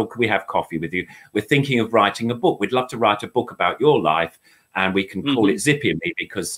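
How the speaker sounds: usual speaking voice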